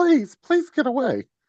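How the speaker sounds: very high-pitched begging, pleading voice. Retelling a woman in a video facing a bear, imitating her pleading. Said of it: "Just pleading with the bear".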